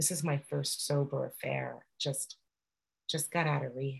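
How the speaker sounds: whispered voice. Retelling what the young guy whispered at the bar: imitating someone whispering. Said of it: "he whispers to me and he goes".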